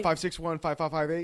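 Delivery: put-on rushed, sped-up, fast reading. Complaining about voicemails, the speaker mimics a caller giving his number: imitating rushed number reading. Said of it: "ramp up and even speed up even more".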